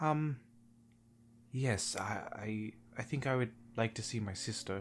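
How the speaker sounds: halting, unsure. The nobleman, asked where he would like to go, answers: hesitant. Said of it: "Kind of hesitates for a second before".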